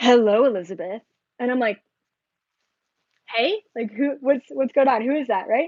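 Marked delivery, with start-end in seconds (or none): 0.0-1.0 big, booming put-on voice. Retelling a channeling, the speaker voices Bashar addressing her: big booming Bashar voice. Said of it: "He's got this big booming voice".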